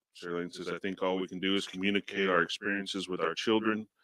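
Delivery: plain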